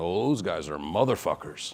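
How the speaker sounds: put-on Irish accent. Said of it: "in his British accent".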